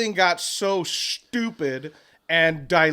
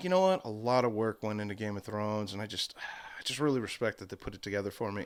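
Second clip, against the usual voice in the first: play-acted, very low, completely straight and earnest; 8 semitones lower, 10 dB quieter than usual. Imitating the other speaker praising a show, dead serious. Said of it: "You were just so straight about it".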